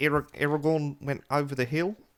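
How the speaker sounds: put-on New Zealand accent. Asked to say the line, doing the only Peter Jackson impression they can. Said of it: "literally only do Peter Jackson saying Aragorn".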